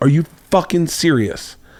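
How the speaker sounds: mock angry, fed-up, demanding tone. Retelling the friend's angry reaction: imitating an angry friend. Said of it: "she immediately gets angry".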